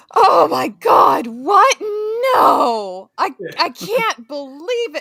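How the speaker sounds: obviously fake, very slow, drawn-out shock. Trying out a reaction to news for the others: fake shocked reaction. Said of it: "that one sounded absolutely fake as fuck".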